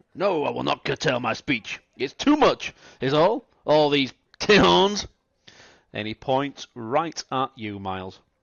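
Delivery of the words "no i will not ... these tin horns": put-on drunk cowboy voice, higher and louder. Voicing a drunken ranch hand refusing to quiet down: drunken ranch hand. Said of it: "A drunken ranch hand".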